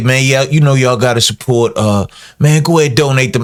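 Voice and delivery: mock dripping sarcasm, clearly insincere, mocking tone. A speaker imitates people sarcastically telling others to donate money, to show they are not sincere. Sarcastic mocking tone. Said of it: "They being sarcastic".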